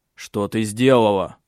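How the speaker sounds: plain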